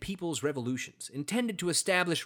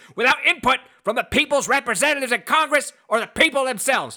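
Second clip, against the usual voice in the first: breathless, winded, high, very loud climbing yell; 8 semitones higher, 9 dB louder than usual. Trying out an impression for a listener, imitating Mark Levin yelling. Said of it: "ran out of breath at the end and started yelling louder and louder".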